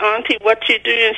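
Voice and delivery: normal talking voice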